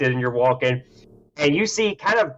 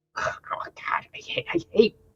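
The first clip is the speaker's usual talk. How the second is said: grumbling, muttering creature voice, higher and quieter; 9 semitones higher, 6 dB quieter than usual. Voicing a creature eating in a dark corner, muttering to itself. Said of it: "just kinda going like".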